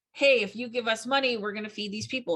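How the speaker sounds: plain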